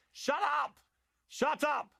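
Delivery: very high, shouted yelling. As the moderator of a heated argument, turn on Marc, yelling. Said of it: "Piers Morgan started yelling at Marc".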